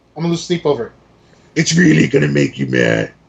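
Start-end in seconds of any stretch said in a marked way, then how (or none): 1.6-3.1 really deep, heavily inflected, swooping voice. Mimicking the other speaker's statement back to give its inflection, in a deep voice. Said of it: "Your voice got really deep over there".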